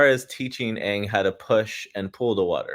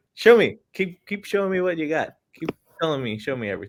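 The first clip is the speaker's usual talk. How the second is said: put-on chipper voice, higher; 7 semitones higher than usual. Retelling a scene where Aang tries to be nice: imitating a chipper Aang. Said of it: "trying to be all, like, nice and, like, chipper".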